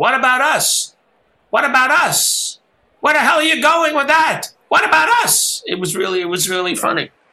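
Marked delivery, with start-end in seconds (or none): 0.0-5.6 mock shrill, sky-high screaming yell. Retelling how Regis stood up in the box: imitating Regis screaming. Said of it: "Regis stood up and started screaming".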